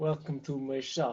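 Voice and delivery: attempted French accent. Playing a shopkeeper after being asked for a voice: attempted french accent. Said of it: "That's not French. It's Russian".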